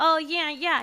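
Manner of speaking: put-on nasal voice, Italian accent. Retelling meeting a man again while working security at Burger Shot, nasal voice with Italian accent. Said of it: "That's his like voice".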